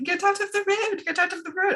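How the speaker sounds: bad, very high-pitched Australian accent. Retelling a man shooing a koala off the road, bad attempt at his accent. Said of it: "I can't do the accent".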